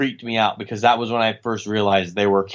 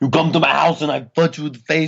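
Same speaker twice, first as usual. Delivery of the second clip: pitched-up put-on Austrian accent; 6 semitones higher than usual. Trying out impressions in a back-and-forth, doing a Schwarzenegger impression. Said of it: "Let's do Schwarzenegger".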